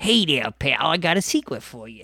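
cartoon rabbit voice, sharing confidentially. Showing how a cartoon rabbit told secrets: Bugs Bunny voice. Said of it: "Bugs Bunny used to talk with the secrets like that".

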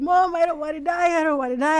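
frantic, high, panicked, freaking-out outburst. Recalling heavy bleeding, the speaker quotes what they told Mom, retelling panicked freaking out. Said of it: "I'm freaking out".

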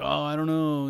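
mock offhand, can't-be-bothered, disengaged, uninterested tone. Retelling a cinema worker's reply: imitating a disengaged reply. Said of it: "just didn't really wanna engage with me".

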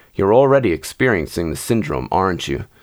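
ordinary delivery

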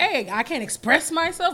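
mock defensive old man voice. Speaker retelling an old man's reply to people egging him on, imitating a defensive old man. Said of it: "got in defense mode".

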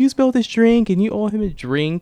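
put-on very high, angry yelling. Retelling how a girl grabbed you and blamed you, retelling an angry yell. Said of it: "she was yelling at me".

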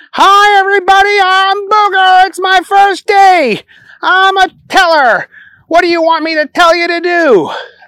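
very high, shrill, all-out yell at top of lungs. Reading a story where Booger arrives at the bank: yelling at the top of his lungs. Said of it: "He yelled at the top of his lungs".

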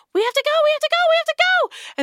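screaming. Narrating as two characters scream at each other: screaming. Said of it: "Del and Zuvi are screaming at each other".

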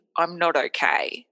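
plain

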